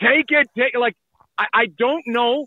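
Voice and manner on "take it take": put-on screaming, insistent, urgent voice. Asking whether the agent is not screaming at sixty million: imitating an agent screaming. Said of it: "is Hannafin's agent not screaming".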